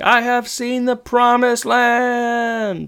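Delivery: put-on very high screaming cry, "land" held long. Retelling a TV episode, imitating Corey screaming.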